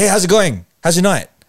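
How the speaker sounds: really aggressive, high, rushed, in-your-face delivery. Retelling a night out, the speaker imitates a girl who stopped them, really aggressive. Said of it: "really aggressive this this like wow".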